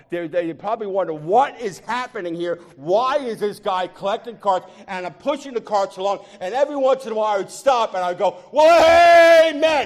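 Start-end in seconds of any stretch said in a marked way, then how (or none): 8.5-9.9 very loud, very high, joyful excited whoop. Retelling stopping while pushing carts in a parking lot, retelling an excited shout. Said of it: "I'm just so excited".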